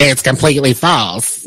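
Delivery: put-on comic old woman voice. Reading out Tyler Perry's response to rumors about him and Oprah, in a Madea voice. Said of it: "That was my Medea voice".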